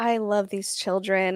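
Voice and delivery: soft, trembling, wavering, shaky voice. Mocking a woman who claims to love the children, imitating a shaky voice. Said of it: "and her voice is all shaky".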